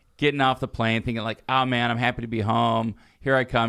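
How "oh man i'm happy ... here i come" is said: ordinary delivery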